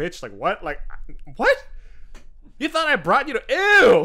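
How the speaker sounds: high-pitched, offended voice. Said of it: "goes to like his offended voice".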